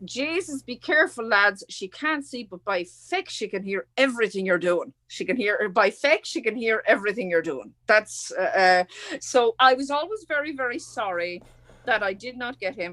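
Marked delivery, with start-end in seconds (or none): 0.0-7.7 put-on Irish-accented speech. Retelling what a student in class said to the others: imitating an Irish student. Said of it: "This is the way he said it".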